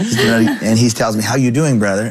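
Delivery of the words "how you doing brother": mock cocky, put-on tone. Retelling how an arrogant man greeted him while he did dishes: imitating a cocky tone.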